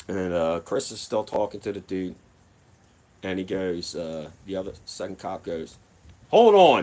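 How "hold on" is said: loud, shrill, high-pitched booming shout. Retelling what a second cop said at a traffic stop: imitating a loud call. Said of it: "real loud like that".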